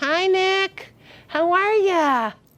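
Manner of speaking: very slow, high-pitched, patient parent voice. Showing what not to do with an adult: parent voice. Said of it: "Don't use a parent voice".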